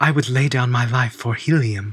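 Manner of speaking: put-on female character voice. Quote a line that she or John Carter says, imitating a female character's voice. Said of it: "I'm going to do it in her voice".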